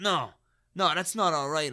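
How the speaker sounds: put-on heavy, slow, drawn-out Eastern European accent. Retelling the reply of a man the speaker bumped into, thick Eastern European accent. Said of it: "in this, like, thick Eastern European accent".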